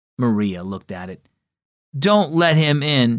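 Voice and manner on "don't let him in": slow, unhurried, cross grumble. Maria tells Dad not to let Otis in, grumbled crossly. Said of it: "she grumbled crossly".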